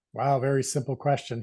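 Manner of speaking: usual speaking voice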